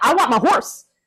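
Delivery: rushed, high-pitched blurt, all words at once. Retelling their own words from a dream, said very quickly. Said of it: "I said it so quickly and so fast".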